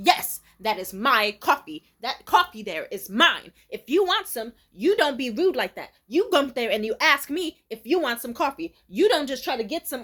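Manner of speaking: loud, furious, angry scolding rant. Retelling how an old lady in the office reacted to a coffee pot question: imitating an angry yell. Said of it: "she stands up hella mad".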